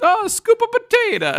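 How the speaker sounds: high, wide-swinging, exaggerated mock Italian accent.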